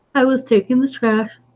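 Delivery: talking through a yawn. Telling a story about a night shift at a mountain resort: yawning while talking. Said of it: "sorry, yawning".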